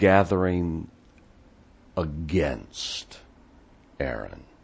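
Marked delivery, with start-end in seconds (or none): 2.0-4.4 against stressed, dropped low and soft. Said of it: "actually means".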